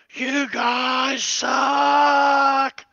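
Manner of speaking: piercing, shrill, very loud, blood-curdling scream. A game master narrates a character dashing through a door, screaming. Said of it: "the whole time he's screaming".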